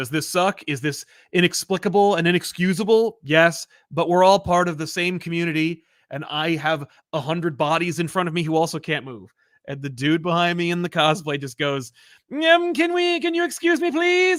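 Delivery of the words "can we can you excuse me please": high, mocking nerd voice, pitched way up. Retelling what the cosplayer behind them said, in a Conan O'Brien nerd voice. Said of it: "making fun of a nerd sound".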